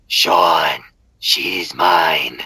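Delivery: low, creepy horror-movie voice. Quoting a woman's recording saying his name; retelling a creepy voice. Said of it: "she speaks in this creepy ass voice".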